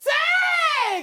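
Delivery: loud shouting. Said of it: "now you get just shout".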